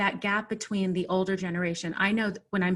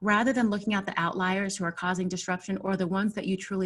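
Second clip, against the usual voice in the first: plain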